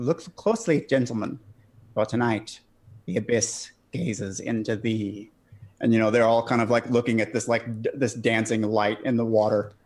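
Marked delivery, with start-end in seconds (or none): 0.0-5.3 fake German accent, fading out. Recalling how they began addressing the gentlemen, in a faux German accent. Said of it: "in the faux German accent of".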